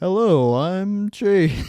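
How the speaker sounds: very loud on-air host voice. Asked by a co-host if that is a radio voice, the speaker gives an introduction in radio voice. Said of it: "maybe not the radio voice this time around".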